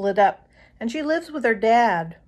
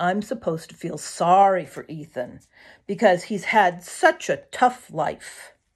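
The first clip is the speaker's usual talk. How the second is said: plain reading voice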